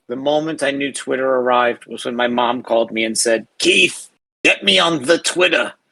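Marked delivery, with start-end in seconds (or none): 3.6-5.7 raspy voice, pitched higher than normal. Retelling a phone call from mom: raspy impersonation of mom. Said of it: "my raspy impersonation of my mom".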